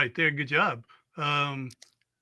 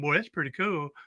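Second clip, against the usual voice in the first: usual speaking voice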